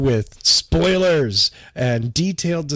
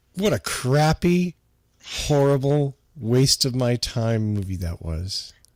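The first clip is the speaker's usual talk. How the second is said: thick sarcasm, fake disdain, plainly not meant; 3 dB quieter than usual. Sarcastically pretending to hate the movie just watched: sarcastic mock disdain. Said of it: "I can't even play the sarcasm game".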